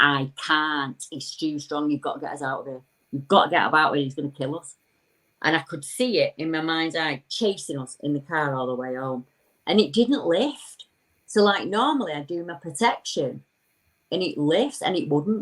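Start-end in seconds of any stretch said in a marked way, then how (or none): none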